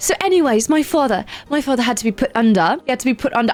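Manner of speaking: put-on British accent. Addressing the audience, the speaker goes on with a story in a put-on British accent. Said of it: "you're gonna sit with this British accent".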